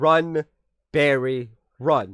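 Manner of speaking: drawn-out, deliberate, slow, heavy emphasis on every word. Quoting a classic line, slow with every word of "Run, Barry, run" emphasized. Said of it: "With that slowness, like the emphasis on everything".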